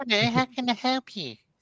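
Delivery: high cartoon voice. Another viewer reacts, retrying the Eric Cartman voice. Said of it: "[name]'s amazing range of impressions".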